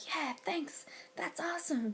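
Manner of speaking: slight put-on American accent. Retelling what the lifters said back after a compliment: little American accent. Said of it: "why I did a little accent there".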